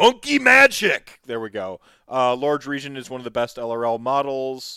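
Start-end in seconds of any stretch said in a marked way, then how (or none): 0.0-1.2 very loud, high, shrill, exaggerated voice. Reading an all-caps message aloud with loud, exaggerated inflection. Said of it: "in all caps, mind you, so I got to say it with more inflection".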